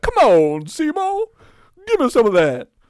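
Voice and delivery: very high, sing-song, swooping creature voice. Imagining the movie's talking plant's line: impression of the movie's talking plant. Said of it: "that's what the plant sounds like".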